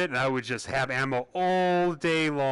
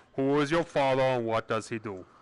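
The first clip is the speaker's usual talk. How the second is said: poor imitation of Austrian accent. Quoting a famous line: bad Schwarzenegger impression. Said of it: "that was a bad Schwarzenegger".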